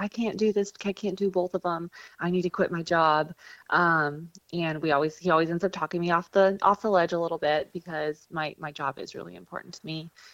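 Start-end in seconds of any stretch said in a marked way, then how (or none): 0.0-3.3 tearful, pleading delivery. Retelling coming home to the cameraman wanting to quit: retelling own past crying.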